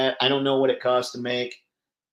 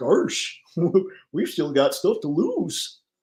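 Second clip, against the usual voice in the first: silly, dopey, goofy cartoon character voice; 4 semitones higher than usual. Voicing a toy figure while posing the figures, in a Goofy voice. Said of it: "goofy voice".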